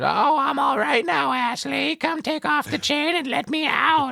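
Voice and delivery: high, slow, mocking taunting tone. Retelling a movie scene where a possessed character taunts: imitating a mocking tone. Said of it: "once again in that mocking tone".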